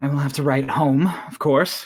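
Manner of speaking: with a little soft sigh. Narrating a character's reply during a game session, with a little sigh. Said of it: "she like sighs a little and she's like".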